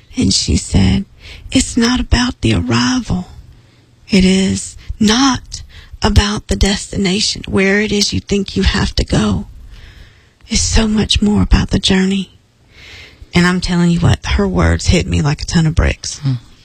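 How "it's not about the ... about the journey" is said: slow, drawn-out Southern drawl. Quoting a Charleston woman across a conference table, slow Southern drawl. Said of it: "everybody talks real Southern and slow".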